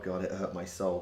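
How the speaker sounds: ordinary talk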